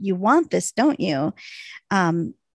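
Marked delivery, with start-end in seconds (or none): none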